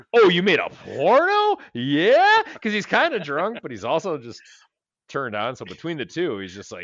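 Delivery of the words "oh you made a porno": high, loud, super-excited, drawn-out eagerness. Retelling a drunk man's line in a scene, mock super-excited. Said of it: "He goes super excited".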